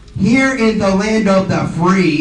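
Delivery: ordinary delivery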